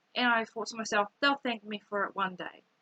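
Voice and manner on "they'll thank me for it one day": usual speaking voice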